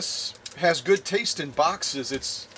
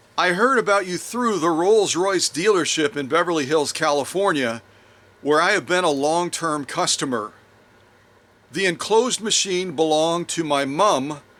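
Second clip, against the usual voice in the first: ordinary delivery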